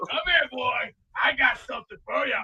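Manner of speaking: very quiet, soft, hushed man's voice. Acting out a man who goes face to face with someone, impression of another man. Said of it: "The Beast Breaker six six six impression of".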